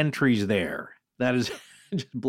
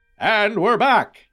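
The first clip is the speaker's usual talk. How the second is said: vintage fifties movie trailer voice; 8 semitones higher, 5 dB louder than usual. Host returning to guests after the intro, in a 1950s movie trailer voice. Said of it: "that's your 1950s movie voice".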